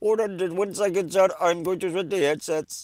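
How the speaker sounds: very high-pitched, put-on Indian English accent. A phone agent in India asks the caller to hold while switching headsets, imitating Indian English accent. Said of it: "that dude in like India that answers".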